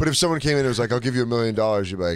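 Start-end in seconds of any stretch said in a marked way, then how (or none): none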